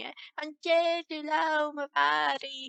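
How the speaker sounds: high, really whiny complaining tone. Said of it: "him being really whiny".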